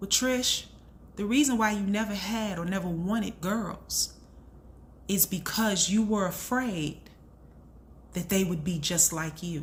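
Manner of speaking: normal talking voice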